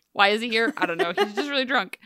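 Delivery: normal talking voice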